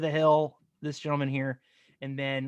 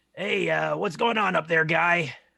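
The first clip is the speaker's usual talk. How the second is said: loud, rough hollering yell; 3 semitones higher, 5 dB louder than usual. Game master voicing the half-orc leader at the foot of the hill: Jensen yelling up a hill. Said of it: "He's he he yells up to you".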